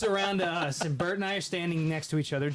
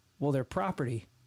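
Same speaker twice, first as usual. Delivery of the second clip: dry, deadpan, matter-of-fact delivery, no reaction; 3 semitones lower than usual. Retelling how a man answered a question about his droids, retelling a deadpan reply. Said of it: "And totally deadpan".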